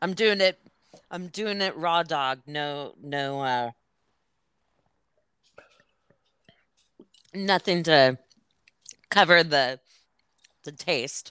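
talking while chewing, mouth full. Eating something plain with nothing to cover the taste: chewing while talking. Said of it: "I'm chewing, as you might hear".

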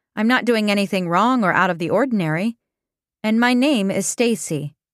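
ordinary delivery

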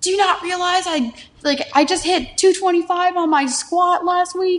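put-on very high, tearful, sobbing plea. Retelling tearing an ACL playing soccer, reenacting crying on the bench. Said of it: "I was on the bench crying".

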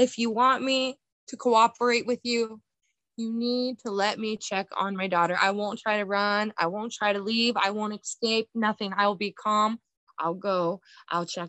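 mock earnest, desperate pleading tone. Recounting an attack, the speaker repeats the plea made to the attacker, reenacting own begging. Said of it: "And I just start begging him again".

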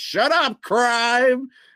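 high, loud superhero battle yell.

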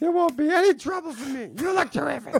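put-on mobster voice, pitched very high. During a Godfather trivia chat, doing a Frankie Five Angels impersonation. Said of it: "You do your Frankie Five Angels impersonation".

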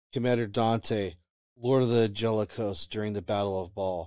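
usual speaking voice

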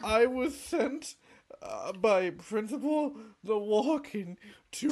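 whining through tears. Telling a story, a crying character repeats his message: whining through tears. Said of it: "stop whining".

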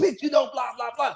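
quick, angry yelling rant. Speaker, chased by two cars, quotes what a man yelled, retelling a yell. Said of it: "I can hear him yelling like".

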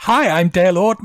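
dorky, slightly high voice. Speaker mocks a drag contestant's stumbling entrance line, imitating Dale Arden's dorky intro. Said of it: "such a dorky line to be like".

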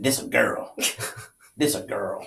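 breathy, whispered put-on Cajun Louisiana Southern accent. Imitating how a cajun man announced a baby was a girl: imitating a cajun man's louisiana southern voice. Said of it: "I bet he sounded like this".

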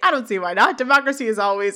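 ordinary talk, nothing marked

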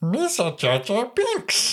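drawn-out, very high, slow, swooping sing-song. Trying a Jar Jar Binks impression on request: Jar Jar Binks impression. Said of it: "Was that good?".

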